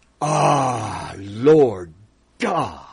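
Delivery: said with emphasis, slowed. Showing how a prayer should be said, emphatic, not monotone. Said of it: "it should be said like this".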